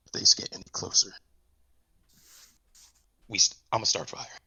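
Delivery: hushed, under-the-breath whispering. Voicing a character with an arrow nocked, watching two strangers: whispering. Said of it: "he's sitting there and he's whispering".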